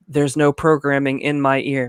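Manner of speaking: mechanical robot voice, flat, dead-level monotone. Imitating a host's bizarre line on the show: robotic Julie Chen voice. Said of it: "the most robotic voice ever".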